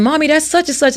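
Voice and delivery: put-on starstruck, high-pitched, excited little kid scream. Retelling a young son calling out during a drive downtown: imitating a child screaming. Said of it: "he started screaming".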